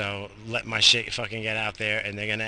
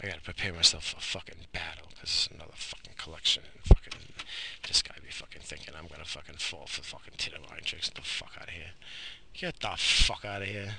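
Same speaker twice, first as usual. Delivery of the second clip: mumbling, quieter and lower in pitch; 5 semitones lower, 7 dB quieter than usual. A speaker talking to his audience, later apologizing for it: mumbling. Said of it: "Sorry for mumbling and shit".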